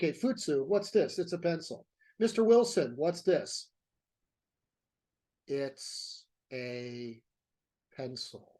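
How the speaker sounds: put-on slow, dull, droning teacher voice. Describing a least favorite art history teacher, the speaker is imitating Mister Wilson's slow, boring talk. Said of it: "he would talk like this".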